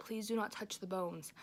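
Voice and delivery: normal talking voice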